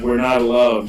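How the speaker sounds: plain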